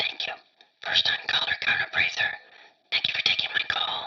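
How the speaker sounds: breathy, hushed, barely voiced whisper. First-time caller [name] on the line with the host, whispering. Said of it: "Why are you whispering?".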